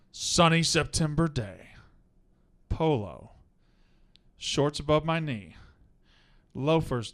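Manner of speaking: very dramatic, overly theatrical reading. Reading a listener's submission aloud when asked: super dramatic reading. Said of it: "super dramatic readings".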